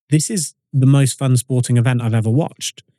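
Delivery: normal talking voice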